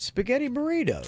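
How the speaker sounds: very high, curious, intrigued tone. Repeating back the dish another speaker just named: curious tone. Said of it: "I can hear the curiosity in your voice".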